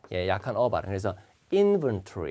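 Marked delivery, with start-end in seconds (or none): 1.5-2.3 inventory with stress on first syllable, IN. Teaching how to pronounce inventory: stress on first syllable IN. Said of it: "액센트가 앞에 있기 때문에 inven 하면 뒤로 빠집니다".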